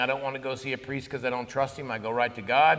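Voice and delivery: normal talking voice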